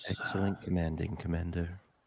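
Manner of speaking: weird, creepy, eerie and unsettling delivery. Praising the commander, who then asks for the other voice: creepy voice. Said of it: "a re- real fucking creepy".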